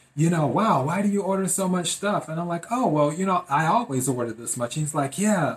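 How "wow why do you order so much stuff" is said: teasing, jokey, said through a laugh. Retelling what a delivery man jokingly asked: retelling a laughing remark. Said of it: "he said with a laugh".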